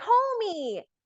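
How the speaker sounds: thrilled, excited, very high-pitched squealing voice. Acting out a fan running up to a Homelander cosplayer: imitating an excited fan. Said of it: "so excited and they see you".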